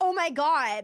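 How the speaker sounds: mock exclamation, blurted out loudly. Speaker retelling people blurting out in a theater, retelling a loud exclamation. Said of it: "out loud again".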